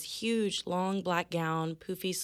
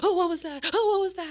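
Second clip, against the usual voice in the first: play-acted shrill, very high, loud panic; 12 semitones higher, 8 dB louder than usual. Retelling a person walking through who had psyched themselves up, imitating someone freaking out. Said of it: "They're freaking out".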